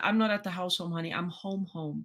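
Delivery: mock sobbing, tearful voice. Retelling calling him on the phone, acting out her own sobbing. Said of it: "and I'm sobbing".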